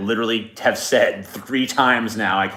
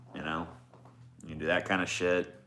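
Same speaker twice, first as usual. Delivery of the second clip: ordinary delivery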